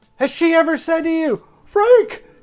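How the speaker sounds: high, loud, jeering shouted call-out. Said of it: "he's like".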